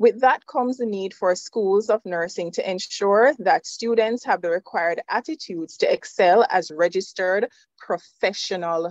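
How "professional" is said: stress on the word "professional". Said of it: "Emphasis on professional".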